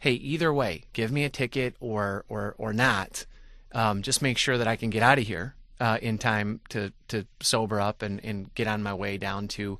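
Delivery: normal talking voice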